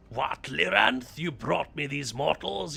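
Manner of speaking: coarse, rough, creaky thuggish villain voice. Imitating the English voice of a Daedra in a prison: thuggish Ibanez voice. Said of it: "he just sort of sounds thuggish".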